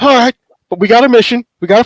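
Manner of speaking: struggling and gasping with strain. A player voices a character just shot in the shoulder, struggling and gasping. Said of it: "I'm going to kind of like struggle, gasp a little bit".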